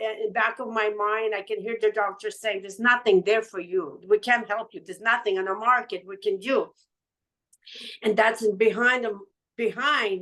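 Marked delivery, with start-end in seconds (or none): none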